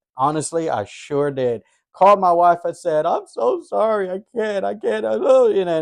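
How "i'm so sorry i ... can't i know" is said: play-acted sobbing through tears, high and tearful. Retelling a phone call apologizing to one's wife: retelling own crying. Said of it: "and just crying".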